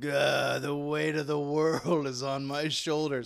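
put-on slow, drawn-out, lamenting old man voice. Joking that the other speaker had old man syndrome: imitating an old man. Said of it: "like an old man syndrome".

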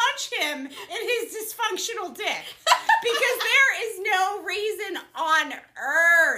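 laughing mock outrage.

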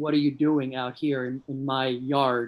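mock agitated, upset, defensive, territorial tone. Retelling a scene from a play in the role: acting out being upset. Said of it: "My character gets so upset".

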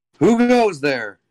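very high voice, called out. Running the scene for the players, the speaker has the character calling out. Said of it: "I'm just going to call out".

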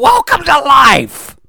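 full-on, rising loud yell. Host greeting listeners hearing the show first thing in the morning, yelling. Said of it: "Yelling will wake them up".

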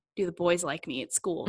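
plain

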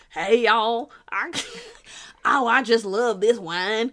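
put-on country bumpkin accent. Speaker mimics a man in a cowboy hat talking about wine: country bumpkin accent. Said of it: "he totally bumpkins himself out with this".

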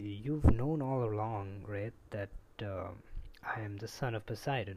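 ordinary talk

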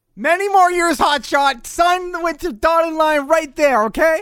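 playful shout. Joking about a listener's message at another speaker: joking yell. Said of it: "Why are you yelling at me?".

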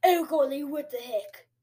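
clumsy, bad, put-on British accent. Repeating own exclamation again, unsure which accent: bad british accent. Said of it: "does that sound like a British person".

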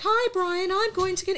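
tiny, very high, squeaky cartoon mouse voice. Describing a strange film to a friend, acting out a talking parasite's line in a cartoon mouse voice. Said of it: "He sounds like Mickey Mouse".

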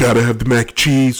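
boastful, bragging voice like a politician. Talking about mac and cheese, speaker slips into a Donald Trump impression. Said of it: "I sound like Donald Trump".

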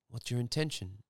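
plain

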